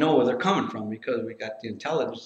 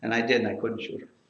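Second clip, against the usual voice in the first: usual speaking voice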